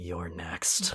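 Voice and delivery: put-on threatening tone. Retelling staring down a box of Special K, mock-menacing threat. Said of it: "I looked up at that box of Special K and I went".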